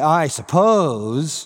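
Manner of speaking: dry, unconvinced, put-on ironic tone. Showing how he might be saying it: sarcastic 'I suppose'.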